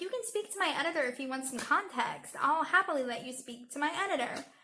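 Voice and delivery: ordinary delivery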